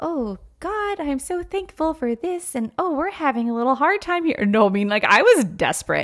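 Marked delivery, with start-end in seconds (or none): 0.0-4.5 sugary, sweet, pitched-up, reverent little voice. Describing how she prayed while spiraling, contrasting it with a mock-sweet devotional prayer. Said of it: "those sweet little devotionals like prayers like".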